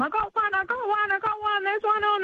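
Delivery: put-on, very high, thrilled, excited shrieking scream. Retelling someone screaming from across the dam, retelling a scream. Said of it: "I heard Vicky screaming from across the dam".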